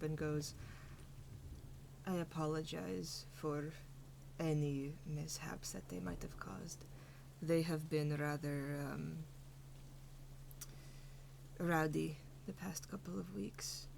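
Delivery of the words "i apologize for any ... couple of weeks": low, soft, gentle voice. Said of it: "the Furbolg just kind of speaks up".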